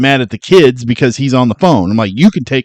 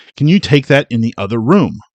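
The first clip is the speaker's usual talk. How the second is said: mock irritated, huffing, put-out delivery; 3 dB quieter than usual. Retelling a character's complaint while making dinner: imitating a huffy complaint. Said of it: "he gets all huffy".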